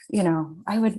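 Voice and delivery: ordinary talk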